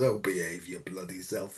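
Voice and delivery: quiet, low-pitched scolding. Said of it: "the other side of me says".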